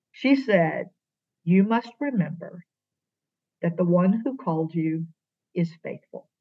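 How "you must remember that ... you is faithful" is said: utterly calm, even, steady delivery. Retelling what Molly said on the phone: imitating Molly's very calm voice. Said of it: "in calmest voice to this day I've ever heard".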